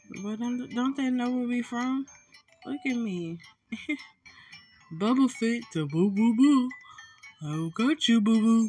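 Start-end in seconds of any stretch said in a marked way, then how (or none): 5.0-8.7 goofy, silly put-on cartoon bear voice. During a game, putting on a Yogi Bear voice. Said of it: "Sound like he sound like Yogi Bear".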